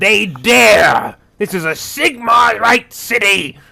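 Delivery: in-character screaming. Playing a zealot charging down the street at night: screaming loud. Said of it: "I'm screaming loud".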